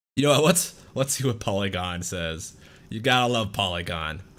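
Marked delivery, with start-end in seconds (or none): 2.9-4.2 mocking and sarcastic. Picking a news site to read from: sarcastic. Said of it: "I say that sarcastically".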